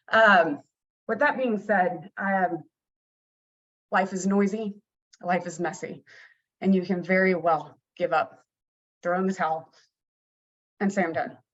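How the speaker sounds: trying not to cry, holding back tears. Abby encouraging listeners, holding back tears. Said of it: "I'm trying not to cry myself".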